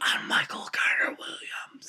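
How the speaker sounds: soft, conspiratorial whisper. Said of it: "whisper in a referee's ear".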